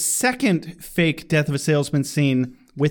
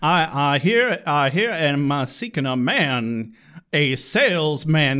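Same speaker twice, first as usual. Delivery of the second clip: mock cowboy voice with drawl. Explaining a scene to a friend, quoting the character's line as an impression, imitating a cowboy. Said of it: "there's no cowboy in Death of a Salesman".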